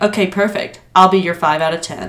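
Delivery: mock-deadpan, straight-faced delivery. Retelling what a woman told her, the speaker imitates her deadpan reply. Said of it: "deadpan, like, just straight face".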